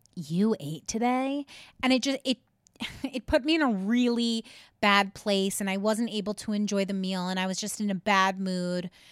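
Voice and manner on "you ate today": snarky, sarcastic, needling, mocking. Recounting a man's remark during a meal, mimicking his snarky tone. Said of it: "in this snarky tone".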